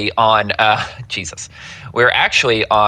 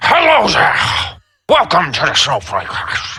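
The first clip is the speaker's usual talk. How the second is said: liquid, wet, throaty voice, pitched up; 7 semitones higher than usual. Asked for another voice, greeting as a character: Colonel Butterscotch voice. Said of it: "more liquid in the middle of your throat".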